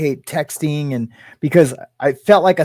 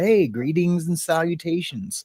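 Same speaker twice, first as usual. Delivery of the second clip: cool, hip movie-star delivery; 6 dB quieter than usual.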